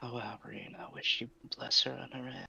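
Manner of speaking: quiet mutter under her breath. Voicing a character praying quietly: muttered under her breath. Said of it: "she say this under her breath".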